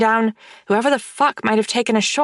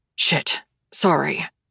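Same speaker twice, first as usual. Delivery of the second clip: grumbling, much lower pitched; 7 semitones lower, 3 dB quieter than usual. A man storming out of the bedroom stops on seeing her, grumbling. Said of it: "he grumbles".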